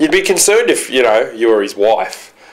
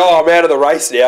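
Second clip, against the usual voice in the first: plain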